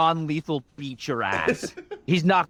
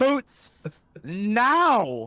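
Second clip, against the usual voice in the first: high, mild, commanding yell, "now" drawn out long; 5 semitones higher than usual. Playing a character demanding boots from another: in-character screaming. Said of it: "screaming at him, calling him a coward".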